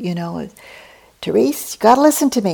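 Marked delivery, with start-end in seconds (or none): 1.2-2.6 heated, loud, high-pitched shouting. Retelling a father shouting back at his daughter: imitating a father shouting back. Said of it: "he was shouting back at her too".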